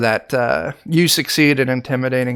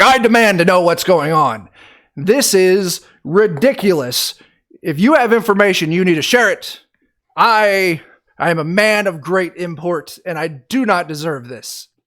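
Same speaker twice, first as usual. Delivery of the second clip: high, haughty, snooty yelling; 6 semitones higher than usual. Narrating the scene, voicing Warren yelling at you after you motion: Warren yelling snootily. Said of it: "He starts yelling at you like".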